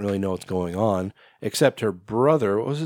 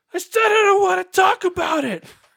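put-on angry yell, higher and louder; 4 dB louder than usual. Retelling a movie scene where a character argues with himself: imitating a character's angry outburst. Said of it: "it flips".

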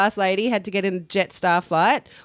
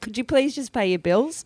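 usual speaking voice

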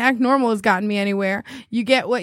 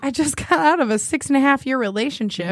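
usual speaking voice

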